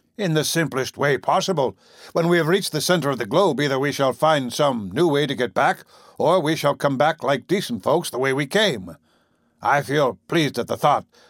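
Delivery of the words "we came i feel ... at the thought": ordinary delivery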